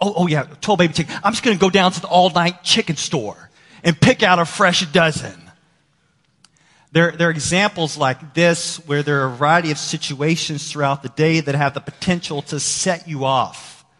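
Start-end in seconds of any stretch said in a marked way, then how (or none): 0.0-5.4 put-on exasperated dad voice, angry, sarcastic outburst. Retelling a story where a dad snaps at his son, acting out an angry outburst. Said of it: "the dad just totally loses it and says".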